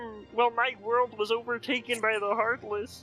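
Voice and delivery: put-on frog puppet voice. Acting out a made-up game scene where the frog character answers: Kermit the Frog voice. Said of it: "what happened to your world, Kermit?".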